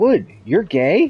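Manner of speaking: mock laid-back, casual, offhand, easygoing delivery. Retelling how someone once casually asked a question one night, retelling an easygoing remark. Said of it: "in the most easygoing voice".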